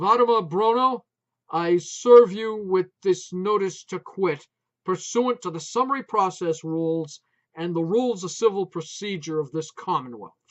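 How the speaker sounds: very loud, effortful, forced authoritative tone. A man serves a notice to quit on an old woman, trying to sound authoritative. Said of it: "He tried his level best to speak with authority".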